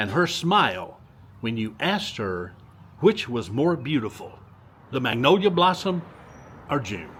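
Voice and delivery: normal talking voice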